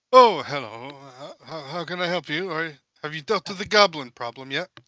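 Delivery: startled, taken aback, surprised. Narrating a game, voicing the mayor who opens his door to the group; surprised. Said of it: "and he's surprised".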